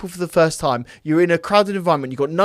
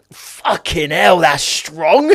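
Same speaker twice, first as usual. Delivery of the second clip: loud, very slow, put-on slow burn reaction; 6 dB louder than usual. Acting out what he did back then, pretending water was vodka: imitating himself faking drinking strong vodka. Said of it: "I'll do an impersonation of what I did now".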